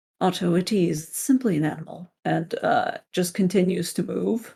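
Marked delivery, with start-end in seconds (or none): 0.2-2.1 eerily calm, uncanny, very soothing unnatural voice. Voicing the abbot dismissing a creature: very soothing, unnatural voice. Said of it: "in his very soothing, very unnatural voice".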